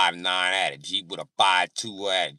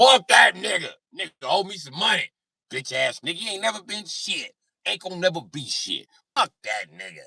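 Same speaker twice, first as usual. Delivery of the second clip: put-on, very high, tipsy, drunk ranting voice; 12 semitones higher, 3 dB louder than usual.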